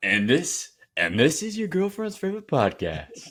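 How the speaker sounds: booming, swooping radio announcer voice. Mocking a co-host's podcast intro by repeating it in announcer voice. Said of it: "With the announcer voice".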